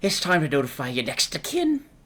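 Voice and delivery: put-on spoken with an Irish accent. Describing the voice you hear in your head, in an Irish accent. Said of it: "It's in an Irish accent".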